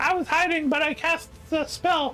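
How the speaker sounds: very high, cowering, frightened character voice. Voicing a cowering NPC who begs Dahl for help: put-on Pipley voice. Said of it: "That's not what he sounds like".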